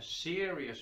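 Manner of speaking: the word "serious" given heavy stress. Explaining antibiotics to listeners, stressing the word serious. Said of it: "and I stress the word serious".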